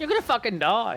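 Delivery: put-on thick Australian accent. During a game, retelling what another player said, in a very Australian accent. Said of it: "he said in a very Australian accent".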